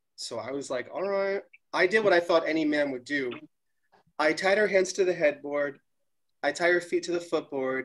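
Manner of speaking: usual speaking voice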